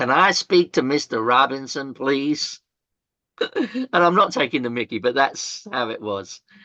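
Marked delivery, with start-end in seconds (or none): 0.0-2.6 bad, clumsy put-on American accent. Retelling what the voice on the phone said, in a bad American accent. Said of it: "I'm shitty with American accent, but this voice said".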